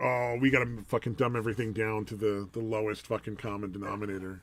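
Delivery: normal talking voice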